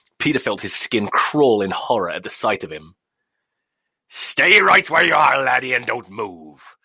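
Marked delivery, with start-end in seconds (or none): 4.1-6.6 put-on loud, drunken, slurred, menacing growl. Narrator reads the captain's threat to Peter in a dark room: drunk slurred menacing growl. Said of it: "the captain's drink slurred voice growled menacingly".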